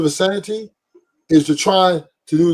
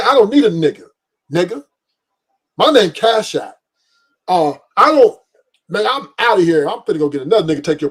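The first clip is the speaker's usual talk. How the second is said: cocky, bold, brassy woman's voice. Acting out what women demand of men: imitating a bold, brash woman. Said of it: "The women are letting they nuts hang".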